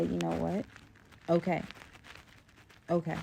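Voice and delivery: ordinary talk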